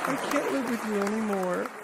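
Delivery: put-on tiny little girl voice, very high. Recalling a remembered line, quoting it in a little girl voice. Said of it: "that little girl voice went".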